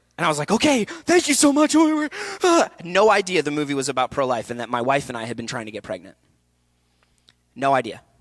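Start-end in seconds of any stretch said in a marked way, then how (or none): 0.5-1.8 mock, very high, sobbing, weeping voice. Hearing on a Zoom meeting that Justin is Nate, retelling own weeping. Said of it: "I started weeping".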